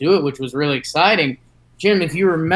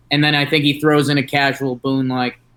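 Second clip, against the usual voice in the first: ordinary talk, nothing marked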